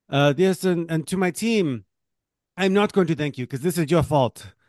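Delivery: put-on Belarusian accent, high pitch. Quoting a woman's joking thanks to her team, in a put-on Belarusian accent. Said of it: "Is this your Belarusian accent?".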